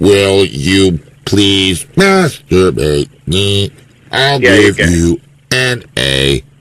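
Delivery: badly done, very low speech-synthesizer voice. Telling a story where a man begs for a favor in return for an A, horrible Stephen Hawking voice. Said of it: "in that horrible Stephen Hawking voice".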